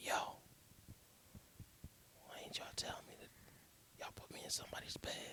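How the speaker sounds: hushed, breathy whisper. Telling a story, acting out whispering to his boy in the morning: retelling a whisper. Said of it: "I'm whispering".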